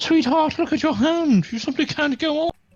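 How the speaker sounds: very high, very loud, shrill put-on British accent. Speaker delivers a quoted line in a british accent. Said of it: "in British accent, you say can't".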